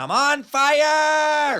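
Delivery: mock thrilled, very high shrill scream, fire drawn out. Telling how flame shot from Elmore's bicycle and he screamed; imitating an excited scream. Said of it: "he was so excited he was screaming".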